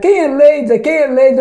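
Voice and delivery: mock woman's voice, shouting repeatedly. Retelling a woman arriving at a restaurant door: imitating a woman shouting. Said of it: "começou a gritar".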